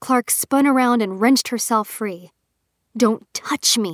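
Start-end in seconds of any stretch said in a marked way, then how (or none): 3.0-3.9 hissed, slower pace. Narrator reads a woman wrenching herself free of a man's grip: hissing. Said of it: "she hissed".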